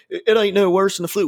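high, terrible put-on Southern or West Virginia accent. Verbally depicting stupid people, slipping into a terrible put-on Southern accent. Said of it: "I always go into like a fucking Southern or West Virginia accent".

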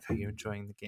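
soft, hushed half-whisper, barely any voice, very quiet. Retelling his mom asking about the arcade game, imitating mom's half-whisper. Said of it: "his mom just like whispering".

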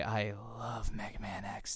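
slow, hammy, fake seductive voice. Declaring love for a comic series as a joke: put-on sexy voice. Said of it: "in that sexy voice".

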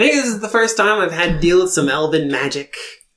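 put-on voice slipping into American accent. Voicing a glowing object's reply to the players, slipping into an American accent. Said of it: "He was Cockney, and you went back American".

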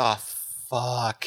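mock sobbing, put-on crying voice. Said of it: "I just was sobbing my eyes".

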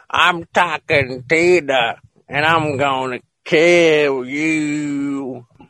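put-on doll voice with southern accent. Retelling a talking doll's threat, now with an accent: Talking Tina with southern accent. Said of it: "she went down south and got a little accent".

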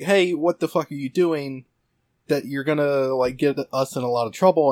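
furious, steaming-mad angry outburst. Retelling a scene where a character confronts a man collecting on another's turf: imitating an angry Nishiki. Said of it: "he is really mad at the guy".

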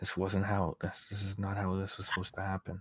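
very quiet, hushed mumble under the breath. Voicing a speechless character who mutters to himself: muttering to himself. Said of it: "He just kinda mutters to himself".

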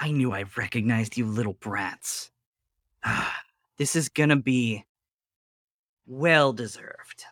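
contemptuous, jeering sneer. Voicing a character confronting the group, Eleanor sneering. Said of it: "Eleanor sneers at you and she says".

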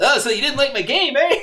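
very high, shrill, loud cartoonish voice. Retelling how someone did a radio show segment, in the Blockhead voice. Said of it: "he does it in the fucking Blockhead voice".

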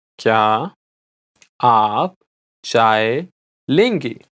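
slow, low, careful, deliberate word-by-word pace. Repeating a Hindi phrase for learners, said again slowly. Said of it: "I'll say it again slowly".

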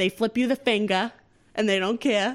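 Massachusetts Boston accent. Speaker explains Massachusetts drivers to an audience: Boston accent. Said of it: "that's a Boston accent".

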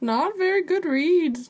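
clumsy, bad, very high little green alien voice. Answering a question about bending lightsabers: Yoda impression. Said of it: "That's my Yoda impression".

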